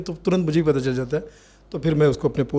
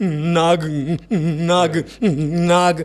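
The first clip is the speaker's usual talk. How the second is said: put-on stutter with stammering repetition. Retelling a stuttering man on the train from Bombay: imitating a stuttering man. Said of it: "एक हकला आदमी".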